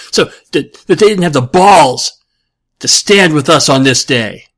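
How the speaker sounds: loud, played-up, put-on Brooklyn accent. Delivering a paraphrased famous speech as best he can, put-on Brooklyn accent. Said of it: "leaning over into Brooklyn there".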